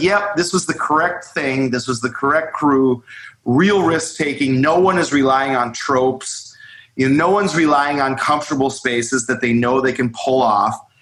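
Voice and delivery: plain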